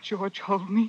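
shivering while speaking, trembling voice. Drama scene, just brought up the stairs by george, asking him for comfort: shivering voice. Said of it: "I'm shivering so".

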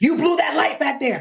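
high, aggressive shouting cop voice. Retelling a traffic stop, imitating the police officer: imitating a yelling officer. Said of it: "he's yelling".

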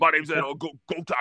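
put-on Louisiana accent. After a suggestion to do a Louisiana accent: Ed Orgeron Louisiana accent. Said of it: "if we were to do the Louisiana accent".

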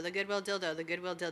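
rattled off very fast, rapid delivery.

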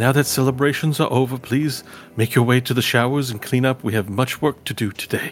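tiny announcer voice. Telling a story, a voice on the intercom addresses the elves: small little voice. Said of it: "a small little voice on the intercom says".

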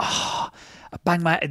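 slow, breathy, whispered, theatrical dramatic whine. Imitating a partner's dramatic complaint about her head: imitating dramatic complaining. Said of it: "This is the other thing she does".

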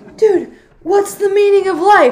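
very loud, high-pitched shouted call-out. Retelling a boy calling out to another kid: imitating someone yelling. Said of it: "yells out to this other kid".

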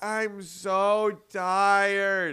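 put-on very high voice of a crying small child. Retelling what a little kid said at a church service: imitating a crying child. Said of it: "a little kid at our church service that was crying".

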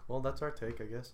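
flat, unenthusiastic. Podcast host wraps up the discussion with a co-host, flat and unenthusiastic. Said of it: "don't sound so excited about it".

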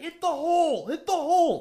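very high, stretched-out, acted old-man yelling. Ridiculing a coach, imitating an old guy yelling. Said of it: "that old guy yelling about".

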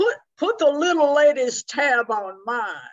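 loud, slow booming man's voice.

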